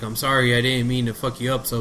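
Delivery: plain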